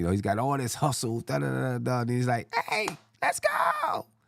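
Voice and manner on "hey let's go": squeaky, very high-pitched voice. Before getting out of here for the night, imitate how he talks in a squeaky voice. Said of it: "squeaky voice".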